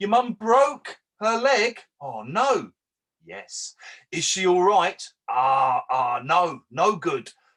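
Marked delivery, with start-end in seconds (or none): 0.0-1.8 pointed, emphatic delivery with raised, pitched-up voice. Language teacher shows how she quietly corrects a student's sentence: louder and emphatic. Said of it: "said louder and emphatically".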